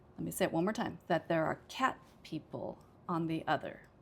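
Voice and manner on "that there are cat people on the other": cat carries the main, strong stress. Teaching sentence stress when comparing two groups, strongest stress on cat. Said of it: "this time I would say it's cat that I emphasize the most because I'm comparing".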